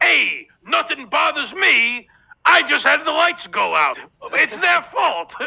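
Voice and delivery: mock tough-guy bravado. Speaker imitating a man who acts unbothered, mocking his macho act. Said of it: "he puts on this, I don't even know if you could call it macho act".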